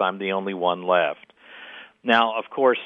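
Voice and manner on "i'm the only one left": ordinary delivery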